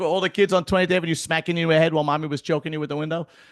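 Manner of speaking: acted, high, mocking, teasing tone. Retelling how brothers reacted to the story: imitating brothers mocking. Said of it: "they were making fun of me".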